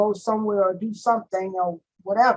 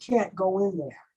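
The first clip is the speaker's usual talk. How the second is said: acted-out, strict but not mean, firm; 5 dB quieter than usual. Retelling what an unseen voice said at the gate: imitating a stern voice. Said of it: "in a very stern voice, but not a mean voice".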